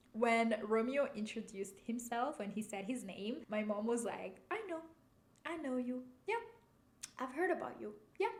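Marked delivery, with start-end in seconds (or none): 4.5-8.2 light, playful, knowing, pitched-up teasing. Retelling a mom greeting a visitor who introduced himself: imitating a playful tone. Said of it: "in such a playful way".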